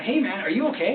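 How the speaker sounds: normal talking voice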